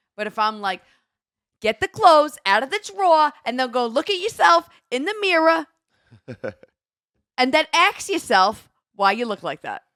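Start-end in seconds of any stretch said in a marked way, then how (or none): 1.6-9.8 put-on New Jersey accent, raised and high. Speaker shows the accent people ask for, New Jersey accent. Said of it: "people will ask me to do a Jersey accent".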